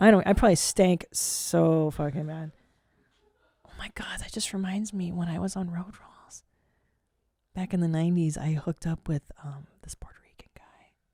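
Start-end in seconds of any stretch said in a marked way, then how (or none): 3.7-10.9 soft, hushed, secretive whisper. Telling listeners about a nineties hookup as if it were a secret: whispering. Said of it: "I don't know why I'm whispering it".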